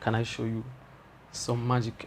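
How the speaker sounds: very quiet, barely audible, meekest timid voice. Retelling asking a classmate to see a trick: imitating own timid voice. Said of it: "in the most timid voice ever".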